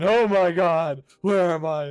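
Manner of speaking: put-on frantic, panicked old man voice. Voicing a panicking passenger as the plane takes off: frantic old man voice. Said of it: "the frantic old man".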